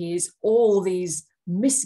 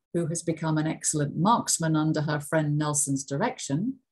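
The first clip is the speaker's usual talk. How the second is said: who-clause dropped low in intonation; 3 semitones lower than usual. Rereading a story sentence aloud: lower pitch on relative clause. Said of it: "the intonation is a lot lower in the relative clause".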